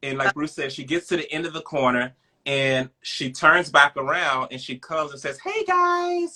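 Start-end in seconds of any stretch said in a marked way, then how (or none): 5.4-6.4 bubbly, very high-pitched voice. Retelling an encounter, the speaker quotes a woman's greeting in a high bubbly voice. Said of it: "She had like this high voice".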